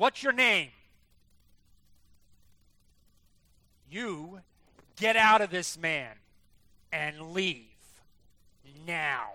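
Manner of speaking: put-on loud, stern, authoritative voice with swooping pitch. Acting out how a man's come-to-jesus meeting sounds: retelling a stern command. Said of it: "The tone of voice is rather stern".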